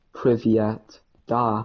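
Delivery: mock bad Russian in a plain American accent. Mocking people who say russian words in their normal american accents, imitating a plain american accent saying russian. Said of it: "do their normal American accents and just go".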